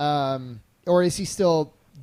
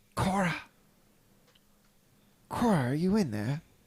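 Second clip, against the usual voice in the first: half-whispered voice; 2 semitones higher, 4 dB quieter than usual. Calling through a locked door to someone who may be inside: half-whispering. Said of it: "whisper through the door".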